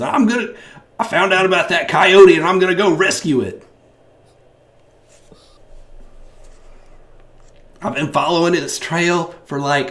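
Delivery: very high, very loud, belted character voice. Voicing an animal rescuer livestreaming from the woods: Jeannie's voice. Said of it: "find this woman's voice".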